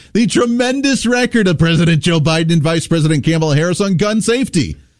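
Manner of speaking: mocking delivery while holding back laughter. Reading a news quote aloud while trying not to laugh. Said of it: "I'm going to try and say this without laughing".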